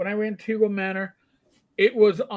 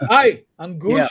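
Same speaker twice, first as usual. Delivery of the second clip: put-on, loud New York accent; 7 dB louder than usual.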